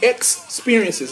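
ex of Experiences hit hard with strong stress. Announcing a Bible study series title: strong stress on 'ex'. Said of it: "Notice I'm putting the emphasis on the word X, E-X".

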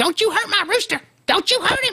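very high, protective scolding voice. Telling a story about the family rooster, imitating mom's voice. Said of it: "exactly what she sounded like".

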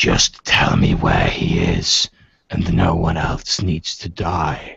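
low, rough, rasping growl. Narrator voices a man pointing a cutlass at the players, rasping voice. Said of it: "His rasping voice says".

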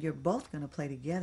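plain

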